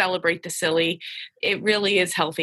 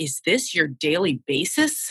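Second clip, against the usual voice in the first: mock aghast, slow, swooping, shocked dismay. Retelling what a little boy asked in the office chaos: imitating shocked dismay. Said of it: "the way he said it with such shock and dismay".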